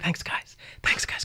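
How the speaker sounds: soft, breathy whisper under the breath. Retelling how they answered the kids' praise, retelling a whispered thanks. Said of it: "And I'm like whispering".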